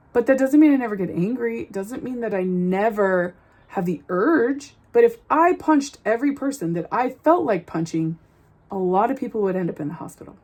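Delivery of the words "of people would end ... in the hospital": normal talking voice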